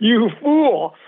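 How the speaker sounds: sternly reproachful. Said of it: "criticizes the questioner so sternly".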